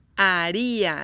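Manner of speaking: haría with the ri syllable stressed on top. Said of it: "The stress goes in the second one".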